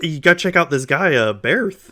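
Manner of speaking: high-pitched, loud, eager tone.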